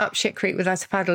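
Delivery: normal talking voice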